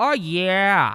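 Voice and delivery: high, loud scream with yeah stretched out. Describing a Jersey Shore catchphrase, screaming 'Oh yeah' like Pauly D. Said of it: "he would like scream it randomly".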